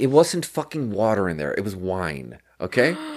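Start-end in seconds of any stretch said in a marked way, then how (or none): none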